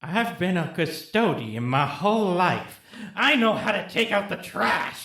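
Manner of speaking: sudden, called-out delivery. Voicing a custodian who attacks the party, yelling. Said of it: "he yells out".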